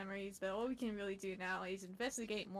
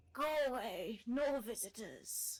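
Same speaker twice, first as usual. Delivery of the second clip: put-on old lady voice, much slower; 3 semitones higher than usual. Voicing a character met at the shrine while playing through the story, old lady voice. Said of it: "The old lady voice".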